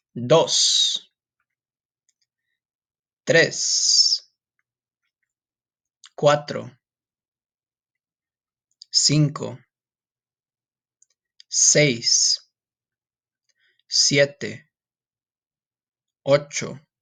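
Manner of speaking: slow, careful, deliberate, evenly spaced-out words. The speaker counts Spanish numbers for listeners to repeat: slow, careful counting. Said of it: "I'm going to say them slow".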